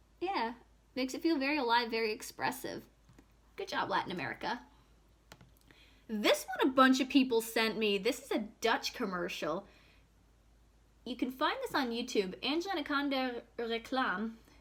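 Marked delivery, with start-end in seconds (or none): 12.4-14.3 French-accented speech. Reading out a Dutch commercial's title: French accent. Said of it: "I said that in a French accent".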